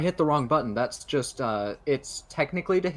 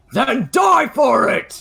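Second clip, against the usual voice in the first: very loud, very high, slow, drawn-out scream; 11 semitones higher, 10 dB louder than usual. Playing a character in a tabletop game, arguing with a foe; screaming. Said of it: "And as I scream that".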